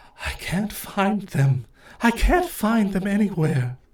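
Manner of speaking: high, mournful, sorrowful, lost ghostly stage whisper. Game master voicing a ghost elf speaking to the party, ghostly elf half-whisper. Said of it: "She looks at the party and whispers".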